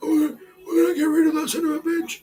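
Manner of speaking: very high voice, pitched way up. Retelling what the boss would say after the walkout: imitating the boss's voice. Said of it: "that's how he fucking spoke with the, with the fucking voice".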